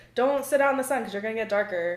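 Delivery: ordinary delivery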